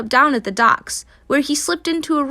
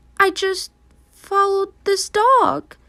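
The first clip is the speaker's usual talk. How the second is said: trembling, frightened, high and shaky voice; 7 semitones higher than usual. A narrator reads a scared kitten surrounded by dogs, shaky scared voice. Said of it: "he said in a shaky voice".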